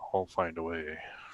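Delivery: muttered under the breath. A player's character takes the necklace, so one other character can hear, under the breath. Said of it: "I'm going to say under my breath".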